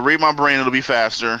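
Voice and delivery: ordinary talk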